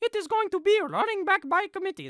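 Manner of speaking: very high-pitched, weak, poor put-on French accent. Quoting what Matt LaFleur will say, in a bad French-accent impression. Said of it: "That that was not even a good French accent".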